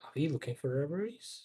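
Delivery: discreet low voice. A player in a tabletop game asks the game master a question, in a lowered voice. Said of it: "I lower my voice".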